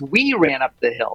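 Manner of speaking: "we" hit hard, rest said plain. Showing how emphasis changes one sentence, stress on 'we'. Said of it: "Not just me, not just you".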